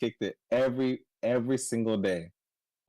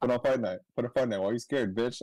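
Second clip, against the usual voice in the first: normal talking voice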